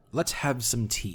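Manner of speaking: put-on slow, crackly, dry-sounding old woman voice. Voicing a little old woman greeting the party: crunching-leaves voice. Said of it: "a voice reminiscent of crunching leaves".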